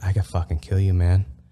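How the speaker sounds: put-on ghostly whisper. Retelling a dream where a ghost figure chokes him: imitating a ghost whispering. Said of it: "it starts whispering".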